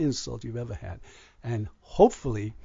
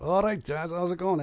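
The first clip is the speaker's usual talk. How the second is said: put-on pitched-up Scouse Liverpool accent; 6 semitones higher than usual. Quoting how his sons greet him when they call; Liverpool accent. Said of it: "my Liverpoolese never dies".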